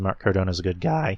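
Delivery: voice breaking. Praising a wrestler as a good guy, voice cracking. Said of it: "my voice just broke".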